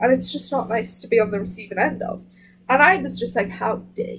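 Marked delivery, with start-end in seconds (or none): 3.5-4.2 hushed, cold, forceful whisper with quiet fury. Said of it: "quietly but powerfully just go".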